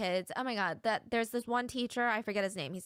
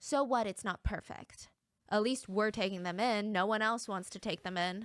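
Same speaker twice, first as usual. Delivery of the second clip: usual speaking voice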